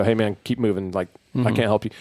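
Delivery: plain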